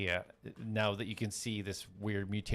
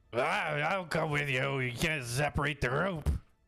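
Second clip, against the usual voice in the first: acted very drunk-sounding voice, higher; 5 semitones higher, 3 dB louder than usual. Offering to come along with the group, acting super drunk.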